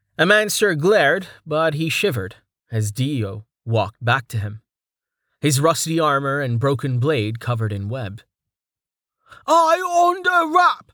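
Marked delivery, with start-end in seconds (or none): 9.5-10.8 shrill, very high, very slow drawn-out shout. Reading a story, a character calls out through a web: shouted. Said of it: "he shouted through the web".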